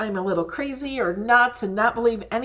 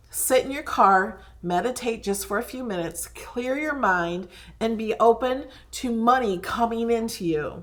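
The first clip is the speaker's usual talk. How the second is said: normal talking voice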